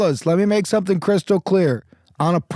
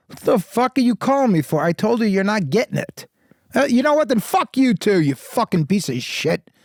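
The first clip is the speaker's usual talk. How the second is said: furious, temper-snapping blow-up. Showing how to play an angry phone call: losing temper on the phone. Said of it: "take a breath like you're about to lose your temper".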